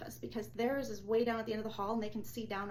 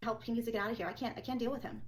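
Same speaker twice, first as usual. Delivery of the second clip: ordinary talk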